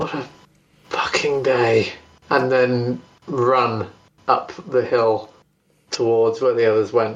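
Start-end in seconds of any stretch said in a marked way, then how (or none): 0.0-1.9 muttered under breath, much lower. A player describes their character Max running up the hill, muttered under breath. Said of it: "kind of mutter under their breath that".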